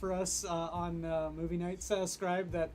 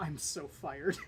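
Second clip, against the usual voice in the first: muttering quietly under the breath. Retelling what an actor said after flubbing a line: imitating muttering under breath. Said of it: "you could just hear under his breath".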